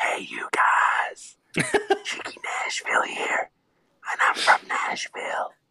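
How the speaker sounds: whisper pitched very high. A caller recording while his kids are in bed introduces himself: whispering. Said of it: "I got a whisper".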